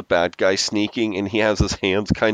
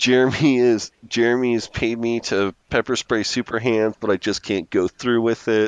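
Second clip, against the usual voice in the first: plain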